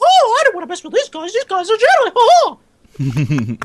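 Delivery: put-on high cartoon mouse voice. Friends imagine Mickey Mouse watching their video; Mickey Mouse voice. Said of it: "Was that Mickey Mouse?".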